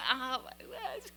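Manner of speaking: put-on, breathy, very quiet, hushed horrified whisper. Retelling spilling wine on someone's mother: retelling own horrified reaction. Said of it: "and just was horrified".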